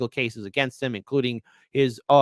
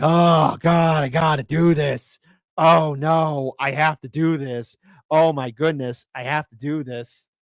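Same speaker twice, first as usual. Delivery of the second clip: very slow, nervous, anxious breathing in and out; 2 semitones higher than usual. Imagining a candidate forced to certify the winner: imitating Kamala Harris breathing anxiously. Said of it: "you gotta be breathing in, you gotta be breathing out".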